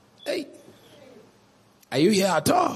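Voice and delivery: contemptuous, sarcastic, swooping sing-song jab. Showing an example of a partner's sarcastic statement: mock sarcastic remark. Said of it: "You just make sarcastic statements".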